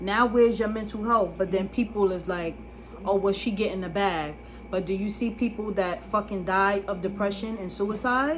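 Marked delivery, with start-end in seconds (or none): none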